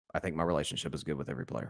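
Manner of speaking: put-on low, soft, terse coach voice. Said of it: "Belichick, quote".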